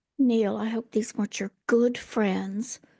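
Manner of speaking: speaking in a whisper. Voicing a character who speaks to another character: whispering. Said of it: "kinda whispers to Neil".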